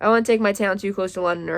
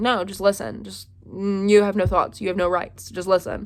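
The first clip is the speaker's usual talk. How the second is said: ordinary delivery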